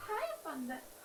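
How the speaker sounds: high-pitched cooing voice.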